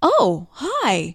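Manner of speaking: mock surprised, caught-off-guard hello. Imitating how she greeted you when you answered her call, mock-surprised phone greeting. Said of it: "like she was just surprised that the telephone worked".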